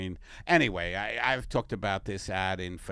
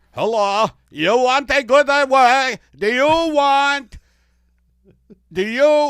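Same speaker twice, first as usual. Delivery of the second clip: bad put-on Italian alien voice, very high, very loud, drawn out; 15 dB louder than usual. Pitching a trip to the moon as an ad: put-on italian alien voice. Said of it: "my voice work today is not great".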